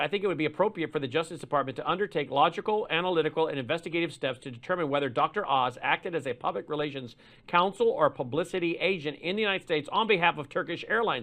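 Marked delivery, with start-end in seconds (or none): none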